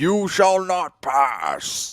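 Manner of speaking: put-on very slow old wizard voice, every word stretched. A commentator describing players who aren't passing does a Gandalf impression. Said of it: "It's my best Gandalf impression".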